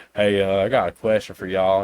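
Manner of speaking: put-on thick, heavy Southern accent. Speaker retells a prank caller's opening to fake tech support, thick Southern accent. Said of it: "he has a real thick Southern accent".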